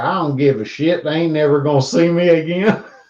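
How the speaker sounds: put-on West Virginia accent. Quoting what a late woman told people, in her West Virginian accent. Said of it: "in her West Virginian accent".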